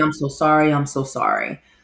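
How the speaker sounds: plain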